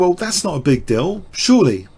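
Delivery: ordinary delivery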